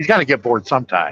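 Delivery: ordinary delivery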